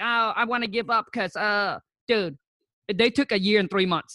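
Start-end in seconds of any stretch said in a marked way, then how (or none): none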